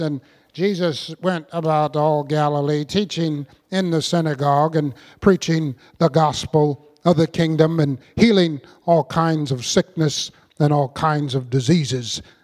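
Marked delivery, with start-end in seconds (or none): 0.0-7.3 droning, low, flat monotone, as if reading. Imitating college teachers who just read aloud, in a flat monotone. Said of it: "in a monotone voice".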